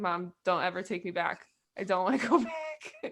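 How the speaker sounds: mock crying, tearful and pleading. Retelling coming home from a first piano lesson: imitating own past crying. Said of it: "I came home from my first piano lesson just crying".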